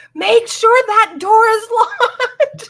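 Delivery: freaked-out yell, very high and very loud. Retelling being frightened at night in the RV: imitating own past yell. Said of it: "I'm yelling at my brother".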